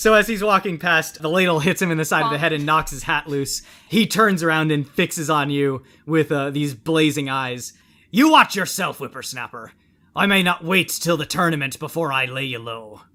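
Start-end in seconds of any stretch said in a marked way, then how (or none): 8.1-12.9 put-on pirate-style voice, pirate accent laid on thick. A game narrator voicing a character struck by a ladle, in a pirate accent. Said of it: "that was a pirate accent".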